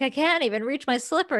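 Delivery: giggling, unable to stop laughing through words. Retelling a scene, the speaker quotes a woman who lost her slipper: mock laughing while talking. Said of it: "couldn't stop laughing about it".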